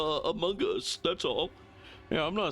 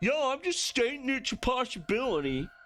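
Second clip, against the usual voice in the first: pitched-up voice with vindictive, accusing edge; 8 semitones higher than usual. Showing how Dio backpedals on an accusation: imitating Dio, vindictive and accusing. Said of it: "he adds so much more vindictiveness to it".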